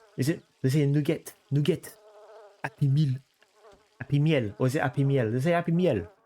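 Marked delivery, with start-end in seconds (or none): 0.9-5.3 put-on French accent, nugget and meal made French. Explaining how they say fast-food names, in a french accent. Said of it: "they say nugget with a French accent".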